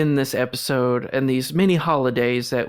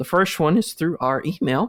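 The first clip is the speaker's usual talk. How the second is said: cracked voice, breaking mid-phrase; 4 semitones higher than usual. Podcast host telling listeners how to contact the show; voice cracking. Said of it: "let me try that again without a voice crack".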